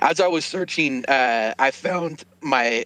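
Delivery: voice cracking and breaking up mid-sentence. In a conversation, telling what was found while searching; voice cracking. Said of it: "my voice is cracking there".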